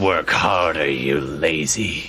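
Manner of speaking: muttered devilish voice. Voicing a huge red devil muttering at a giant creature: muttering devil voice. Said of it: "you see him muttering in infernal to this thing".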